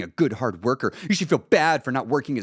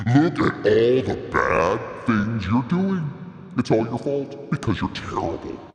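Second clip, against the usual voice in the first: monstrous inner-critic monster voice; 2 semitones lower than usual. Speaker acts out the voice in their head that tore them down: monster voice. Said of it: "You can hear the monster voice".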